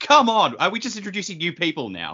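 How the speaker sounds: mock angry, indignant outburst. Retelling one's own reaction to a new character: imitating own angry reaction. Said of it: "really angry".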